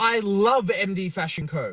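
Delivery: ordinary talk, nothing marked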